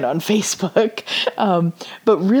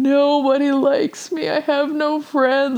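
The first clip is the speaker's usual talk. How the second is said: put-on drunk crying, much higher pitch; 7 semitones higher than usual. Recalling getting drunk for the first time, imitating their past self crying. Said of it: "Crying and going".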